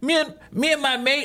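poor fake Australian accent. Speaker tries telling a story in an Australian accent: bad Australian accent. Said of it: "I can't do an Australian accent".

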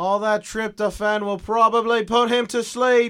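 high, slow, drawn-out darts announcer voice. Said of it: "He sounds like a darts announcer".

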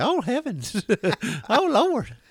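put-on very high, slow, swooping little old lady voice. Voicing their doctor character as a little old lady: little old lady voice. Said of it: "turned their doctor into like a little old lady".

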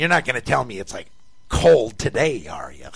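very snotty, sing-song, swooping, needling tone. Speaker retells what Mike said walking in the door today, imitating Mike's snotty tone. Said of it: "with a real snotty tone".

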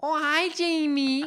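very high, squeaky, loud put-on voice. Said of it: "the voice you're using".

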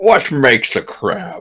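put-on Scottish-accented voice. Joking about crabs, the speaker does a Sean Connery impression. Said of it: "That's my Sean Connery impersonation".

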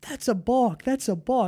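put-on high-pitched screaming, out of control. Recalling watching a baseball game, re-enacting own screaming at a balk. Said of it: "I'm screaming".

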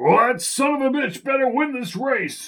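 high, growling, bear-like voice. A narrator reads a man's remark during a horse race: Hamilton Fletcher bear growl. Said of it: "voice sounded more like a bear growling".

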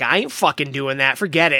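ordinary talk

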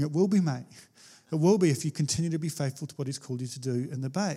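whispering. Retelling own past words spoken while tearful: retelling a whisper. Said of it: "And I'm just whispering".

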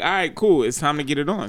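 ordinary delivery

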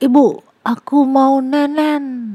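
put-on high, loud, slow toddler shout.

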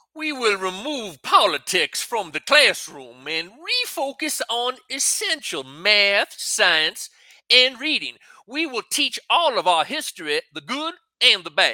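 put-on strong Southern US accent. Asked to perform a phrase in his best voice, the speaker uses a deep South accent. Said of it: "that's way deep South".

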